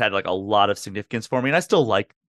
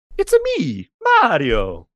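high, loud, swooping, swinging character voice; 8 semitones higher, 5 dB louder than usual. Answering a request for a good impression: Mario impression. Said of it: "what's a good impression you can do?".

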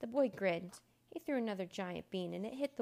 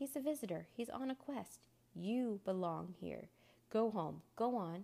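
plain reading voice

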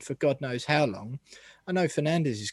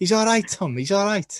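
bad, rough Scouse accent, pitched up; 6 semitones higher, 5 dB louder than usual. Trying again to act out a voice heard on West Ham's pitch audio, a bad Scouse Cresswell impression. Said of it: "I can't do Scouse accents".

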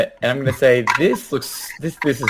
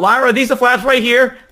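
very high, hollered yell; 10 semitones higher, 4 dB louder than usual. Calling out in character to Lyra: shouting. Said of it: "I'm just gonna shout".

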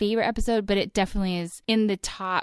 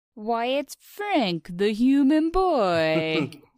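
put-on cartoon cat voice, "boy" drawn out; 3 semitones higher than usual. Asked to do an impression of a character from this episode, playing the cat. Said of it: "do an impression of a character from this episode".

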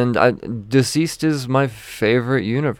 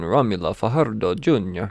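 mock, put-on Italian accent; 2 semitones lower than usual. Reading out comic credits, saying the colorist's name in an Italian accent. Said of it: "said a Spanish name in Italian accent".

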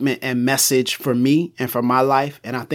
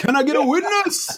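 held long and pitched way up high; 14 semitones higher than usual. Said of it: "you gotta say it like [name]".

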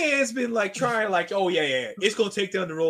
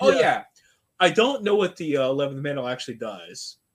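put-on breezy, unbothered, offhand tone; 6 semitones lower than usual. Retelling what a book character casually mentions: imitating a nonchalant character. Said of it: "he says all this stuff so nonchalantly".

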